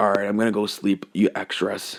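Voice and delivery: ordinary talk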